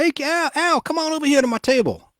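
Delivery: put-on dumb-sounding voice, pitched way up high. Retelling a story of Denzel Washington calling a friend over: stupid Denzel Washington voice. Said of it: "that s-, stupid voice".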